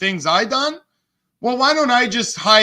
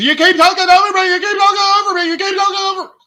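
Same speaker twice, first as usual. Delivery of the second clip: very high, mock whiny, sarcastic nagging voice; 12 semitones higher, 4 dB louder than usual. Mocking how another speaker keeps complaining: mocking imitation of someone. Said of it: "how stupid she sounds when she's".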